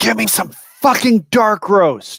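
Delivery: shrill, all-out yell, pitched very high. Making a scene on entering, a player's character yells. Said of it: "and then yell".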